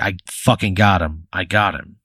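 proud, savoring it, drawn-out delivery. Voicing the player walking into the clearing holding the ashes: proud. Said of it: "proudly holding him out".

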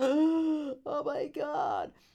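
high, slow, stretched-out shocked gasp.

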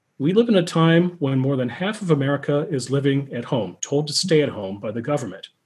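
ordinary delivery

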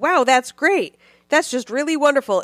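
mock pandering, fawning voice. Retelling a court-ordered therapist's reply, speaker uses a mock pandering congratulations voice. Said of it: "in a very pandering, liberal congratulations voice".

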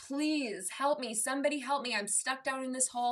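play-acted pleading cry, high and mild. Retelling a parable about a man stuck in a hole: retelling a yell for help. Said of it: "he's yelling".

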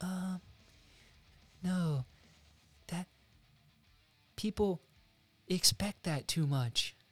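high, slow, drawn-out little-guy voice. Retelling how a script reader reacted: Rian Johnson impression. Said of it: "That's my Rian Johnson impression".

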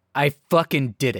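ordinary talk

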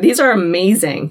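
normal talking voice

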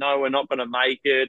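plain

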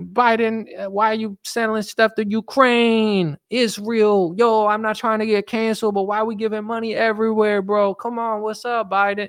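put-on voice with Spanish accent, high, drawn out.

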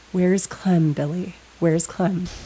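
loud stage whisper. Recapping a scene, acting out a woman leaning toward a sobbing man, loud whisper. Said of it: "she loudly whispers".

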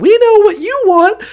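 put-on falsetto, pitched very high. Retelling what two weirdos said when asked for help: falsetto voice. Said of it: "two falsetto voiced weirdos".

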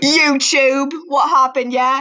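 put-on British accent. Doing a British voice in a joking bit, use a put-on British accent. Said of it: "British voice".

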